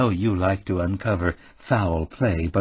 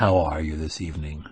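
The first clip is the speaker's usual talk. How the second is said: seductive voice, laid on as far as possible; 4 semitones lower than usual. Reading a story aloud, a character greets a woman on the phone: most seductive voice. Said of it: "he said in his most seductive voice".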